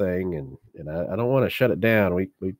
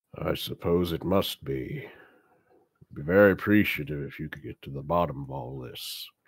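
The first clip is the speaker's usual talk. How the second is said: elephant-person creature voice, much lower; 4 semitones lower, 5 dB quieter than usual. Game master voicing the one in charge, answering two visitors, loxodon character voice. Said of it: "you see a large elephant person, Nice. a loxodon. / you see a large elephant person, Nice. a loxodon. / And he says, / He's in charge of this whole place".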